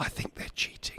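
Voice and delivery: soft, very quiet stage whisper. Confiding a suspicion to Brandon about a team cheating: whispering. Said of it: "I'm gonna whisper this".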